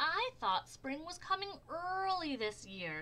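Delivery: very high-pitched grumbling voice. Narrator reads a story as snow starts falling: complaining Squirrel voice.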